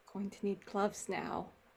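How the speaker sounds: quiet mutter under the breath. Playing Ash, who swears on seeing new tattoos: muttered under her breath. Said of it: "swears under her breath and goes".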